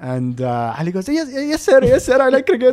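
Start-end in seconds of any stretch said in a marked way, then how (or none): 1.1-2.7 put-on anxious, jittery, nervous voice, pitched high. Retelling a nervous staff member answering the VP: imitating a nervous employee. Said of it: "like that".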